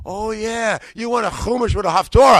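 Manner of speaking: put-on New York accent.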